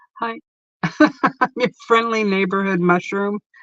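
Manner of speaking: speaking through giggles and laughter. Speaker introducing a mushroom giving advice, laughing while speaking. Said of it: "shouldn't be laughing".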